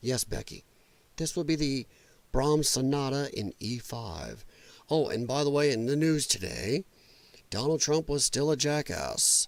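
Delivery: low, hushed, half-whispered murmur. Mocking how public radio staff talk to each other, NPR staff half-whisper. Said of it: "they all whisper to each other".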